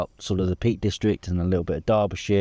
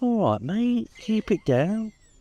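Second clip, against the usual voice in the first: very high, slow, unhurried pet dog voice; 13 semitones higher than usual. Retelling a walk with the dog Bella, voicing the dog Bella. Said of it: "but literally Bella went".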